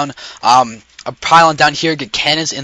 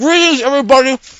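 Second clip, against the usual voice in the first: very high voice, talking through a full mouth; 11 semitones higher than usual. Greeting everybody at the start with a cookie in mouth: talking with mouth full. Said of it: "I have a cookie in my mouth".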